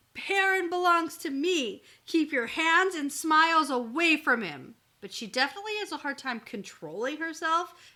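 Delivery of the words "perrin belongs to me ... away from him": put-on loud hollered-out yelling. Retelling how a character yells at a rival: imitating a character yelling. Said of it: "So she yells at Berylane".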